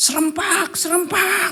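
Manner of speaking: put-on high, loud childish yell, shouted in unison.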